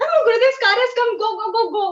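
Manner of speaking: very excited, high-pitched, fast, blurted voice. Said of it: "my mom was super excited".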